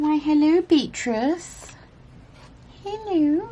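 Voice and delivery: put-on high, cooing baby-talk cat voice.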